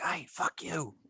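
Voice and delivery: high, hushed, secretive whisper. A player describes whispering into a sleeping goblin's ear to start a fight, whispering. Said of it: "I'll just whi- whisper in their ear".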